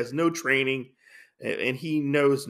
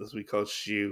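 normal talking voice

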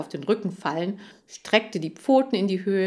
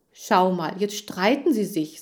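plain

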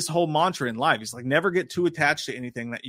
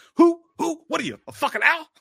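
terrible, very high, badly done put-on voice; 4 dB louder than usual. Quoting an interrogation scene: terrible Al Pacino impression. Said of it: "the terrible Al Pacino impressions".

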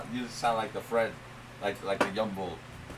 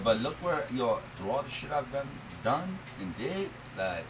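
usual speaking voice

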